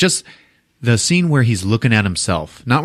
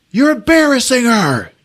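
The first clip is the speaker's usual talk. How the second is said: mock, very high, shrill, furious yelling; 14 semitones higher, 4 dB louder than usual. Retelling a film scene where the DP yells at the director: imitating someone yelling. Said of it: "just starts fucking yelling at Tommy".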